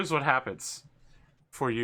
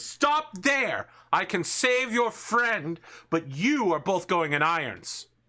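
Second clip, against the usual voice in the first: high, loud shouting in an invented language. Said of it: "He shouts at you in Elvish and says".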